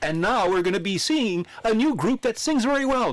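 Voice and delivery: high, slow, grand English stage announcer voice.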